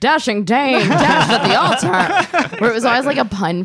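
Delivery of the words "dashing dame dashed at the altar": put-on loud, slow, old-time transatlantic newsreel announcer accent. Recalling old newspaper headlines that punned on tragedy: old newsreel transatlantic voice. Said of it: "in that like transcontinental voice".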